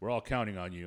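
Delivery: put-on deadpan, grave, serious tone. Describing an actor's comic scene, quoting his line in a mock serious tone. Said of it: "he comes in with his serious face and serious tone of voice".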